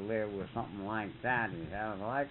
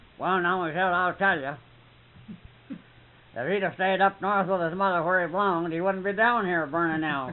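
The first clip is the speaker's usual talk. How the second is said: put-on very loud, high, gruff-talking old man voice; 7 semitones higher, 9 dB louder than usual. Acting out an old fella's answer to Michelle about Bob, as a gruff-talking old fella. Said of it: "a gruff talking old fella".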